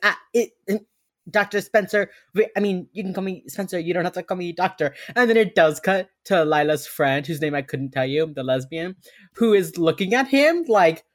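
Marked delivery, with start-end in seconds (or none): 0.0-4.9 put-on stuttering, higher and louder. Retelling a character being introduced to someone, imitating someone stuttering. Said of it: "Spencer is stuttering so much".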